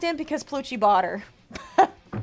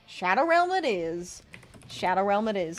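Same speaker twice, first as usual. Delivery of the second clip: put-on Southern girl accent, pitched low; 5 semitones lower, 4 dB quieter than usual. A streamer sends a viewer to the shadow realm, southern girl accent. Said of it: "That Southern girl accent".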